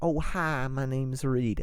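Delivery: put-on, laid-on Southern belle accent. Speaker tries out voices for a character and asks the others to pick: Southern belle accent. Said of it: "Southern belle".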